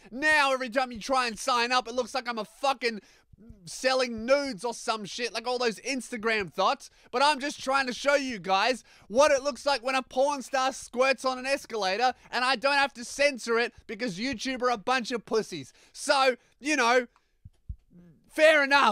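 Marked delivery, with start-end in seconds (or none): 0.2-15.8 angry shouting, higher pitched. Ranting about a sign-up page labeled not safe for work: yelling. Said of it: "I'm very sorry for yelling".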